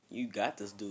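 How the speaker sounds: ordinary delivery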